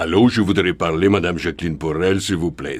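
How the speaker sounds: put-on lowest possible voice with a Russian accent. Playing a phone caller asking for Jacqueline Porel: deep voice, Russian accent. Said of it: "prenez la voix la plus grave possible avec un accent russe".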